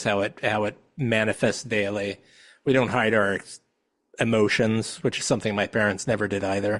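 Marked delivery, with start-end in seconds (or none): none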